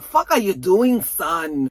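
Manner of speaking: bad put-on Irish accent. Recapping the story, the father scolds his son, in a bad Daddy Flynn Irish accent. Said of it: "That's a really bad Irish accent".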